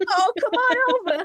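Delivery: put-on very high, high-pitched little-old-lady voice. Trying out different voices, the speaker does a grandma voice. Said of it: "That's the grandma voice".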